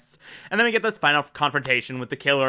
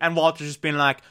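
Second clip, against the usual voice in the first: usual speaking voice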